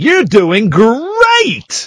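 swooping American robot voice, great drawn out. Retelling what the running app says every three minutes: imitating an American robot voice. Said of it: "you get this American robot going".

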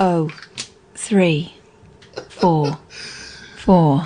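slow put-on female voice. Repeating the phone number more slowly when asked: slow put-on female voice. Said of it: "a bit more slowly in a f-".

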